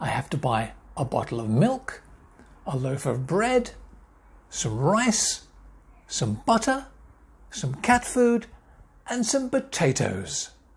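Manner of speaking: upward lilt on every item, potatoes unlifted. Intonation lesson reading a shopping list: rise on every item except last. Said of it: "My voice went up at the end of each word except on the last one".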